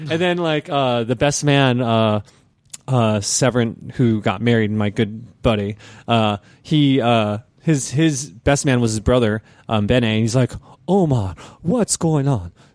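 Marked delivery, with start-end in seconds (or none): 10.9-12.5 clumsy, overdone, put-on German accent. Telling a wedding story, quoting the best man greeting you, imitating Bene's German accent. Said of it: "I know I sound like Count Chocula right now".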